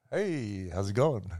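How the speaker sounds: laid-back, soft, smooth cool-guy voice. Recalling spotting a girl at school and greeting her, in a cool guy voice. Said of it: "is that your cool guy voice?".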